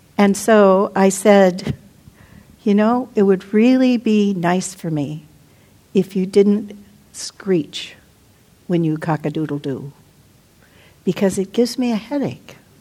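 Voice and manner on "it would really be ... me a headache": gentle, calm, quiet, even-toned voice. Retelling asking someone who kept screeching to stop, retelling a calm, quiet request. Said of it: "Calmly, quietly, I was able to say this".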